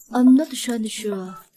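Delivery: ordinary delivery, nothing marked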